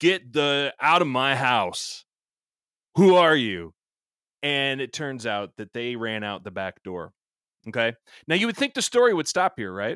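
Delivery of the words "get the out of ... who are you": meanest, loudest, drawn-out yell. Retelling ordering strangers out of the house: retelling a mean, loud yell. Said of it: "I just yelled in my meanest, loudest voice".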